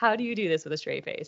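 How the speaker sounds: plain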